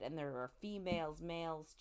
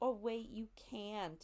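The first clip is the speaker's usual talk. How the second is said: mock teasing tone, higher pitch; 5 semitones higher than usual. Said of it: "are teasing him".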